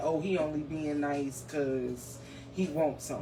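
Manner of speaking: plain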